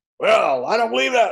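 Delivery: woman's shrill, very high, loud scream. Speaker retells a woman at his presentation challenging him, retelling a woman's screaming. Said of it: "She was screaming".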